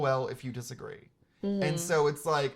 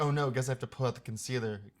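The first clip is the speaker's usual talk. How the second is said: put-on gleeful excitement. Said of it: "literally trembling, shaking with, like, with, with glee".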